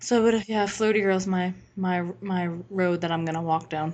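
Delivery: gloomy, dejected, really depressed. Wrapping up a remark to the other speaker, sounding really depressed. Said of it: "you just sounded really depressed".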